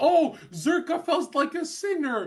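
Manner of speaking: very loud, high, fake wounded hurt cry. Mocking how the other debater paints them: mock hurt tone. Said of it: "Stop painting it like I'm hurt".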